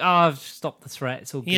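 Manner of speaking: usual speaking voice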